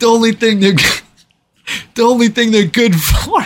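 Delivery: loud yell. Retelling a man yelling insults at the police: imitating someone yelling. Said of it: "he starts yelling at the cops".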